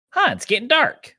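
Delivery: very high, roughly done bad cartoon put-on voice. Act out King Kai as it suddenly gets dark, in a bad King Kai voice. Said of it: "that's a bad King Kai voice".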